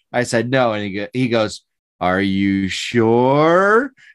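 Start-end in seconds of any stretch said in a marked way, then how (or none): 2.0-3.9 mocking, imitated slow talking. Retelling a man pushing a one-dollar add-on, imitating someone talking slowly. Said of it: "just because he said it slower".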